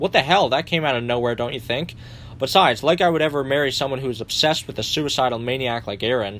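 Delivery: ordinary delivery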